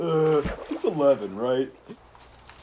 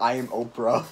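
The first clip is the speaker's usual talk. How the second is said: ordinary talk, nothing marked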